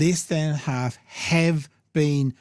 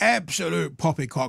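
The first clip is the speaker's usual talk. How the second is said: creaky, mocking put-on government official voice; 3 semitones higher than usual. Imitating the government's reply on free childcare: mocking government voice. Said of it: "that's my government voice from now on".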